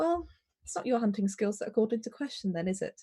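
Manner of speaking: quiet, half-muttered, under the breath. Voicing a courier beside the elk corpse, talking to another character, slightly under the breath. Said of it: "a slightly like under their breath conversation".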